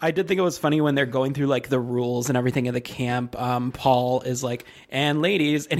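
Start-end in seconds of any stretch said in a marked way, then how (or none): none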